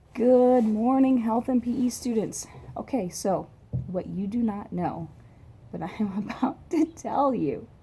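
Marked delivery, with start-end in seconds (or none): 3.1-7.7 words breaking into laughter while talking. Greeting health and PE students before telling them something; laughing. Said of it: "I'm laughing because you just don't even know".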